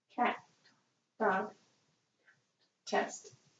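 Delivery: barely voiced, soft whisper. Doing a whisper voice test with one ear covered: whispering. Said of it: "I'm going to whisper in the other".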